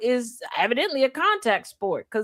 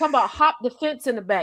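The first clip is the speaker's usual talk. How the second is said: ordinary talk, nothing marked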